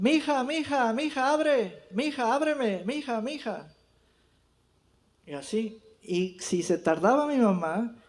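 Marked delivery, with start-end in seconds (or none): 0.0-3.7 repeated, raised, pitched-up calling shout. Retelling how father called mother to open the door: imitating father shouting. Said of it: "le gritaba a mi mamá".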